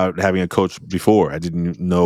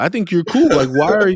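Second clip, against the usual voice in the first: high, pitched-up, calming, placating tone. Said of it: "I'm like".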